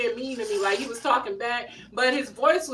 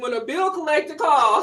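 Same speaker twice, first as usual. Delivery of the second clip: ordinary delivery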